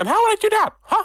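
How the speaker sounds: loud, high, squeaked-out voice. Narrator voices a mouse talking back to the players, Mickey Mouse voice. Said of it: "Mickey Mouse accent".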